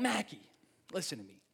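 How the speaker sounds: put-on accent of Rhode Island. Recalling his mom pushing him to do a play: thick Rhode Island accent. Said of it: "She has a thick Rhode Island accent".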